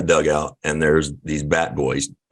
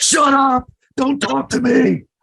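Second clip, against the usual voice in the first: very high, slow, fake-furious dismissive snap; 4 dB louder than usual. Retelling snapping at young bat boys to scare them: imitating a scary outburst. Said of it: "Scared the shit out of them for a second".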